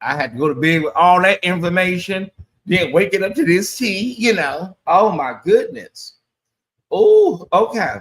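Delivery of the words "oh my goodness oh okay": slow, tearful, swooping, near tears. Talking to viewers about waking up to this news, teary-eyed. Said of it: "Y'all got me already teary eyed".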